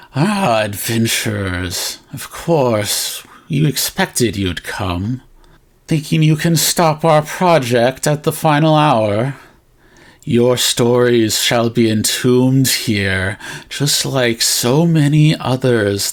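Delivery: horrible, sly, grinning fox-spirit voice. Voicing a fox demon who greets the adventurers, grinning fox demon voice. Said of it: "You hear the voice like a grinning fox demon".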